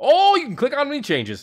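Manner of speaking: high-pitched, loud, thrilled excited outburst. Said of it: "got a little excited".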